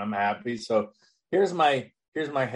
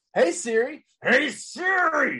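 put-on anger, much higher and slower. Retelling calling his voice assistant while driving, acting out being pissed off. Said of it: "somebody just pissed me off".

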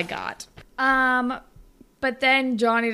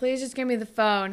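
ordinary delivery

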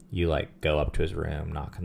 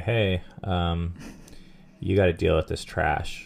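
ordinary delivery

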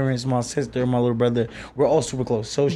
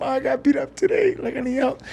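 mock very high, tearful crying voice; 12 semitones higher than usual. Recalling coming home after being beaten up, quoting what they told their mother: retelling own past crying. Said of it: "I came home crying".

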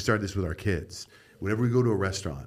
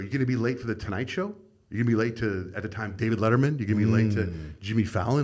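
plain

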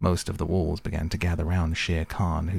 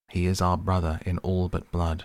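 usual speaking voice

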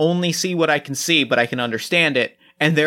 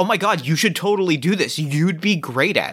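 put-on eager, gushing, encouraging fan voice. Imitating people on Twitter urging someone to make something: imitating an encouraging voice. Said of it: "it's that encouraging voice of".

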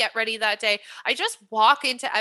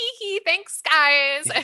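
high, coy giggling, "guys" stretched out; 6 semitones higher, 4 dB louder than usual. Thanking the guys in a store who just praised her, retelling a coy giggle. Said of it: "I'm just fucking twirling my hair".

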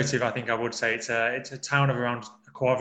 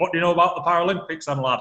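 put-on Bolton accent, pitched up; 5 semitones higher, 4 dB louder than usual. Recalling a job interview, repeating the interviewer's question in Philip Craven's Bolton accent. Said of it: "he said in his Bolton accent".

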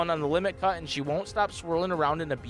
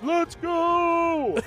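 very high put-on voice with stretched, drawn-out "go"; 12 semitones higher, 3 dB louder than usual. Doing a quick impression of Jason, Jason impression. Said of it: "Jason's voice, let's go! That was my impression of Jason".

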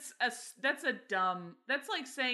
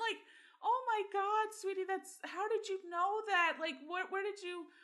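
imitated tearful, crying voice, pitched higher; 12 semitones higher than usual. Retelling an aunt's reply to a small boy's question, imitating her crying. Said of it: "she just starts crying".

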